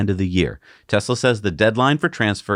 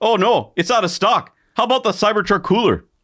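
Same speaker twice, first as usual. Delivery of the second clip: put-on Canadian accent with high pitch; 12 semitones higher than usual. Joking about accessories sold in canada: put-on canadian accent. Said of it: "talk about Cybertruck accessories in Canadian".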